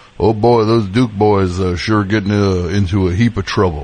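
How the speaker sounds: put-on slow, old-fashioned TV narrator voice. Pitching a podcast idea to the other speaker: Dukes of Hazzard narrator impression. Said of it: "on the Dukes of Hazzard, he's just like".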